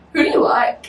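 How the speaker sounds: put-on childish little kid voice. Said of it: "he was talking like a kid voice".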